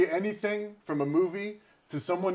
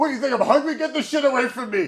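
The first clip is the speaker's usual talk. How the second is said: mock hostile, loud, mean, pitched-up voice; 9 semitones higher, 6 dB louder than usual. Retelling how a man refused food someone brought him: imitating Jeff acting mean. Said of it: "be mean before".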